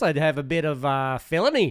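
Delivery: put-on Australian accent. Joking that criminals were sent to australia: put-on australian accent. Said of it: "that's why I talk like this".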